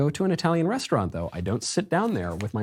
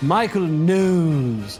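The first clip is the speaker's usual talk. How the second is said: mock-posh, put-on British Received Pronunciation accent; 3 semitones higher, 6 dB louder than usual. Mocking a demand to pronounce a name properly, in a put-on rp accent. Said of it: "pronounce that name like the Queen herself. I want R P".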